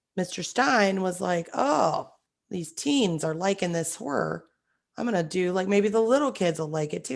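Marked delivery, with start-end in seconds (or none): none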